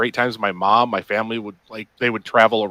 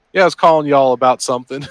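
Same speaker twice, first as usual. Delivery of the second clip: loud, put-on Texas accent; 4 semitones higher, 5 dB louder than usual. Showing how work calls sound to texas: imitating a texas accent. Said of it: "I'd be like".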